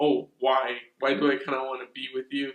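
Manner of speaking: mock, heavy, biting sarcastic tone. Retelling a girl's reply to boys inviting her trick-or-treating: imitating a sarcastic tone. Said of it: "really sarcastic".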